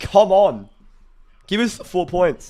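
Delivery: very loud, high voice breaking and cracking apart. A fan cheers the team on after winning the coin toss: voice cracking. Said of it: "the voice is cracked there".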